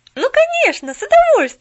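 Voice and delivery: very high, very loud exclaiming cry. Pollyanna answers an offer to pick her up again, exclaiming. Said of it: "Тут же воскликнула Поллиана".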